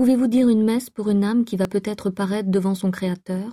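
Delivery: ordinary delivery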